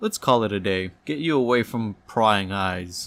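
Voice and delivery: ordinary talk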